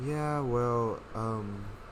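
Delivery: calm, nonchalant celebrity voice. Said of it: "like, a calm ass voice".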